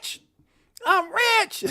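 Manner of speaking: pitched very high and loud. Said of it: "I'm in my Dave Chappelle's voice".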